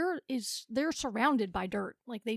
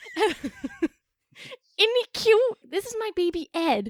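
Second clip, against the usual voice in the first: very loud, high speech cracking into laughter; 9 semitones higher, 8 dB louder than usual. Showing how parents introduce a baby by name, laughing while talking. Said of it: "couldn't get through it without laughing".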